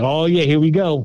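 plain

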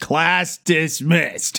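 very slow, drawn-out mock announcer delivery.

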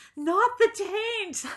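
very high, sudden, blurted yell. Retelling a stripper backing up into her face: retelling own yell. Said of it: "I just yelled out".

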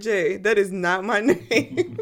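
slow, laughing delivery.

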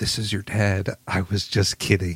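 whispered voice. Retelling what someone whispered to a patient before surgery: imitating a whisper. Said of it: "he whispers to him".

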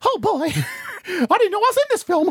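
very high, swooping, squeaky cartoon mouse voice. In an improvised scene, Mickey Mouse appears after being pointed out: Mickey Mouse voice. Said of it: "I can't believe I'm meeting Mickey Mouse".

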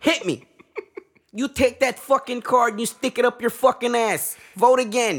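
very loud, shrill, high-pitched yelling. Comparing America overthrowing elections to a casino scene: Joe Pesci in Casino voice. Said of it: "Joe Pesci in Casino".

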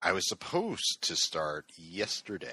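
supposed stressed with a wide pitch swing.

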